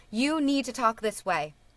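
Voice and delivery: plain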